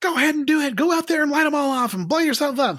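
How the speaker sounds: scolding voice pitched way up high. Imagining the listener's mom chewing them out over fireworks, imitating a mom scolding. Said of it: "in your mom's voice".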